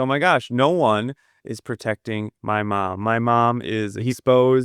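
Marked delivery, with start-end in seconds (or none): none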